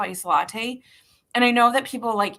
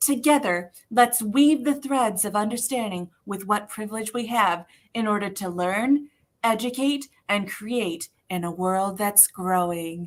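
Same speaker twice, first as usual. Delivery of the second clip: put-on woman's voice. Host reading the show's mission statement aloud, in a Moira Rose voice.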